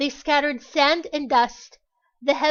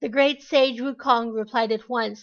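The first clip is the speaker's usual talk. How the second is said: ordinary delivery, nothing marked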